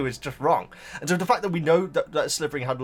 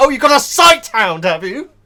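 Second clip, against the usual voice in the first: very loud, swooping, over-the-top pedantic delivery; 9 semitones higher, 13 dB louder than usual. Acting out own over-the-top remark to a dog owner: loud imitation of own remark. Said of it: "that was probably really loud".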